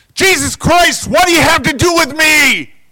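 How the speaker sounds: shrill, very high, very loud top-of-lungs scream. Telling the story of a man screaming as Jesus walks toward him: retelling a top-of-lungs scream. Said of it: "the guy screams at the top of his lungs".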